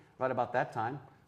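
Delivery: ordinary delivery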